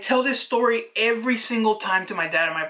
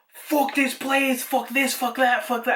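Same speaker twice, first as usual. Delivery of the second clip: put-on terrified, frightened voice, pitched higher; 3 semitones higher than usual. Retelling seeing a big handprint on a shirt: retelling terrified cussing. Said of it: "and I was terrified".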